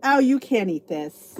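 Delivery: play-acted, slow, patronizing, condescending tone. Retelling what people at school would say about food: mock-condescending. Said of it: "they say it condescendingly".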